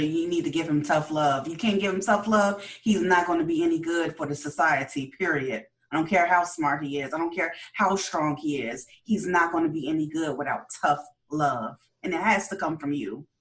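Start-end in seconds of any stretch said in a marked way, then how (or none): none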